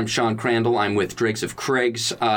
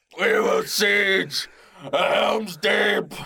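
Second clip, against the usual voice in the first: put-on orc voice, higher pitch; 8 semitones higher than usual. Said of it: "I can't do Uruk-hai voice".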